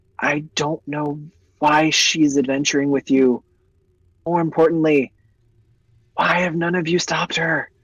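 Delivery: whispering. Storyteller voicing a man who leans in to the adventurers, whispering. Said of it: "leans over and whispers and goes".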